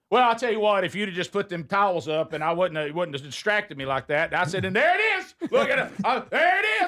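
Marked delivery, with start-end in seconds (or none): 4.6-6.9 very high-pitched, acted-out shouting. Telling a driving story, re-enacting their own shouting in the car. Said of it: "I just started shouting in the car".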